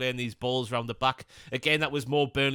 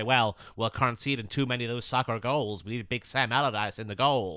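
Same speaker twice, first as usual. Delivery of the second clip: put-on American accent; 2 semitones lower than usual. Imagining american owners complaining about conceded goals: put-on american accent. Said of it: "That's a good American accent there".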